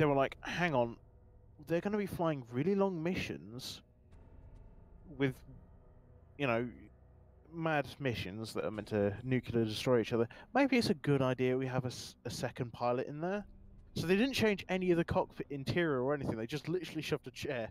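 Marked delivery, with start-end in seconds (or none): none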